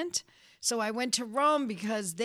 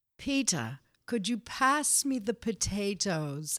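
odd-sounding, drilled, careful, practised diction. Retelling practicing elocution sentences at home with her family: practiced elocution voice. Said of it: "Angela's talking funny again".

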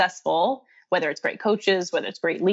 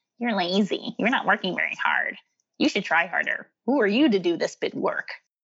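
put-on mean, nasty little voice. Describing the voice of doubt people hear, imitating a mock-nasty inner voice. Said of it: "that mean, nasty little voice comes in and goes".

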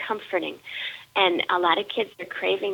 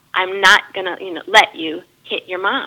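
put-on firm, energetic voice, louder; 7 dB louder than usual. Retelling how a preschool director stopped a child: imitating Jan's firm, energetic voice. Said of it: "in a very firm and, and quite energetic voice".

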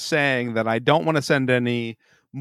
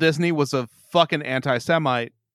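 usual speaking voice

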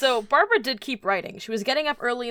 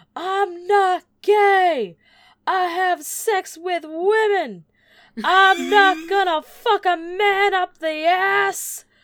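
aggressive, shrill, very high, loud screaming rant; 9 semitones higher, 8 dB louder than usual. Retelling what an aggressive man yelled at people next to him, retelling a man's screaming. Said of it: "he just started screaming".

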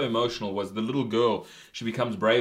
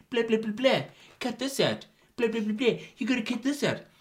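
very high-pitched rattling delivery; 12 semitones higher than usual. Imitating another opinion demanding cuts to an edit: imitating Jason giving notes. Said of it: "Is that how I sound?".

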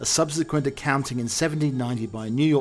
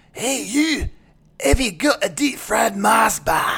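put-on Glaswegian Scottish accent, higher and louder; 10 semitones higher, 7 dB louder than usual. Joking about an ai that spoke in a scottish accent, imagining its next line: glaswegian accent. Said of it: "Glaswegian accent".

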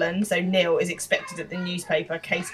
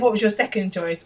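plain

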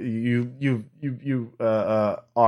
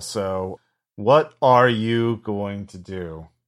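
ordinary talk, nothing marked

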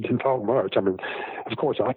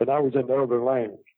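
usual speaking voice

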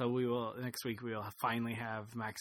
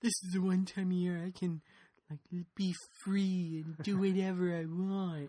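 pitched-up hippie douchebag guy voice; 8 semitones higher than usual. Speaker explaining Halloween's appeal, in a hippie douchebag impression. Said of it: "that was my best impersonation of a hippie douchebag guy".

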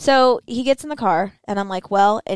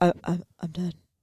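put-on choked-up voice, quieter; 2 semitones lower, 6 dB quieter than usual. Retelling a speakerphone call: imitating someone choked up. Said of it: "you sounded choked up".

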